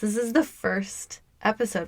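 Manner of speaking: breaking voice, cracking mid-line. Podcast host introduces the first episode, voice cracking. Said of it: "My voice just cracked".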